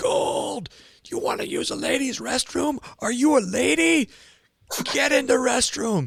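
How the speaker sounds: very high, mock drill instructor screaming. Retelling a drill instructor ordering him into the restroom: imitating someone screaming. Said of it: "he's just screaming at me".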